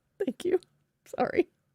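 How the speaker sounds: words breathed through laughter. Thanking someone for a compliment, laughing while talking. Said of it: "why are you laughing?".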